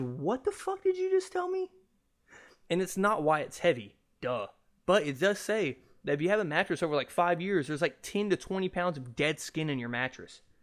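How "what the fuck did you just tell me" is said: very high disbelieving outburst. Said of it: "I said".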